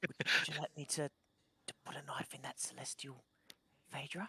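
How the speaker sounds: whispering in character. Voicing a figure who offers to put a knife in someone: whispering in character. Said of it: "a whisper in your ear".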